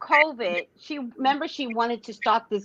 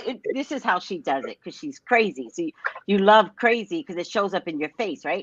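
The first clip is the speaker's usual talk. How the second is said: ordinary talk, nothing marked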